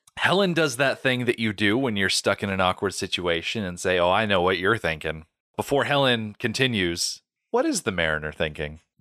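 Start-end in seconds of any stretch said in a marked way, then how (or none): none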